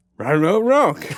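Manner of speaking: loud, high cartoon dog voice. Teasing another speaker by copying his Scooby-Doo impression. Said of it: "doing your, uh, Scooby-Doo impression".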